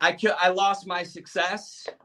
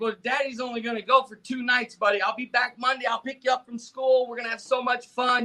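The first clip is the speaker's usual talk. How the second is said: put-on upbeat comforting tone, much higher; 5 semitones higher than usual. A father retells comforting his crying son before a trip; retelling positive reassurance. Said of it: "trying to be positive like I always did".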